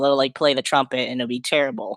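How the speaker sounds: ordinary talk, nothing marked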